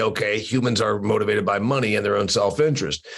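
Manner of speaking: ordinary talk, nothing marked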